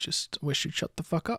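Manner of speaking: stage whisper. Voicing a character who sneaks behind an enemy: whispering in character. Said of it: "I'm gonna whisper his ear".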